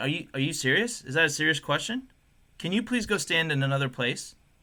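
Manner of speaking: mock, really condescending, patronizing tone. Retelling asking a man to stand elsewhere, imitating own condescending tone. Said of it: "I said it like really condescending".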